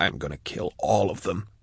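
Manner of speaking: whispered. Drusha speaks after watching the deputy's body fall, in a whisper. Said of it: "she whispered".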